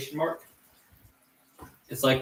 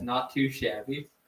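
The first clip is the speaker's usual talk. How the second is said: ordinary talk, nothing marked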